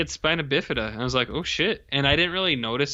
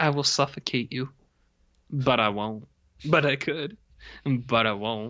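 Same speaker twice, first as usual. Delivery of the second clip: hammed-up, theatrical, over-the-top overdramatic delivery. Retelling a character holding pillows to faces: imitating an overdramatic character. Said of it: "he's so dramatic".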